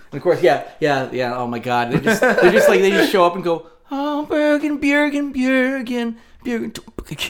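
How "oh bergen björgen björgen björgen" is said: very high, slow, mocking drawl, every word stretched. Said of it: "that was my Radiohead impression".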